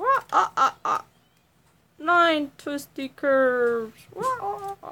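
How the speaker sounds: botched vampire count impression with high-pitched laugh. While counting to nine, the speaker attempts a Count Dracula impression. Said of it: "I was trying to do a Count Dracula".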